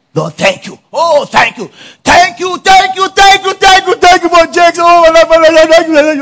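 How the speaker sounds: loud, high, play-acted crying, fervent and tearful. Acting out how people pray for a pastor: acting out a tearful thankful prayer. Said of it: "You start crying".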